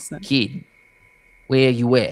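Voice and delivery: put-on New York accent. Ice cream cart man calling out to a kid: put-on new york accent. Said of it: "New York".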